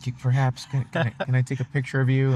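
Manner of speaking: mock-shy, put-on shy voice. Imitating a friend's younger self asking to take a picture: imitating shy Francisco. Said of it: "the shy one".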